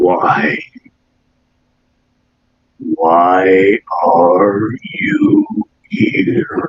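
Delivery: very deep, very slow, drawn-out, swooping voice. A being in a cave confronts an explorer in a very deep, very slow voice. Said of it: "it speaks in a very deep, very slow voice".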